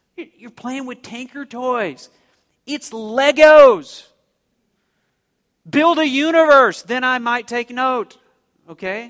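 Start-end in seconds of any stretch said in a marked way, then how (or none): 0.1-8.2 high, loud, mocking scoff. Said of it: "God just kinda mocks them there".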